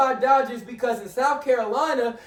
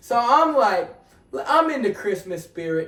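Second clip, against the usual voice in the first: ordinary delivery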